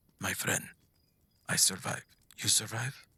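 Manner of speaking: barely-there, tiny, faint whisper. As game master, voicing a message spell that reaches the player: tiny whisper. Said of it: "you hear a tiny whisper".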